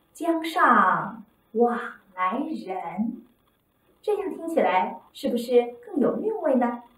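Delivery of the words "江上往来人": very slow, lingering, stretched out after 江上. Teacher shows students how to read the first line: slight lengthened pause after 上. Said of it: "在每一句的第二个字后稍作停顿，但是不能断开，最好是适当的延长。比如第一句，我们就可以这么读".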